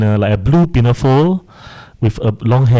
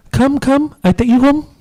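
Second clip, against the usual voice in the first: put-on very high, gentle, coaxing voice as if to a child. Retelling what they said alone in their room, speaking as if to a child. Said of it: "And in in that voice".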